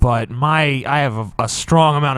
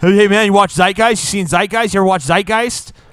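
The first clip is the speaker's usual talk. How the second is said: insistent, badgering, pushy raised voice; 7 semitones higher, 6 dB louder than usual. Retelling inbox messages pushing a film: imitating people pushing Zeitgeist. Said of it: "all you saw was invitations to watch Zeitgeist".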